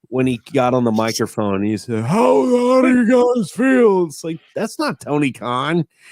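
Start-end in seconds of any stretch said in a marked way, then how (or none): 2.0-4.0 put-on big boy voice, pushed very high. Retelling how Tony Khan spoke on the microphone: Tony Khan big boy voice. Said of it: "he did have that big boy voice".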